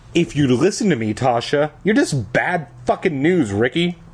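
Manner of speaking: usual speaking voice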